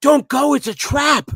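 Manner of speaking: blurted out very loud and high. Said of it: "he said it so loud".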